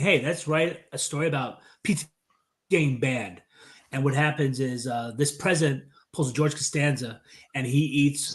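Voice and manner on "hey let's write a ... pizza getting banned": ordinary talk, nothing marked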